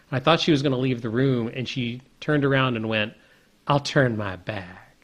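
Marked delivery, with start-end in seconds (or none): 3.6-4.8 put-on mild Southern accent, unhurried pace. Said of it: "kind of a Southern accent sort of thing".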